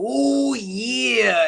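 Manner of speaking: rough, high wrestler voice, long stretched "yeah". Retelling imitating wrestlers as a child: Macho Man Randy Savage impression. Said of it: "If I was like Macho Man, Randy Savage".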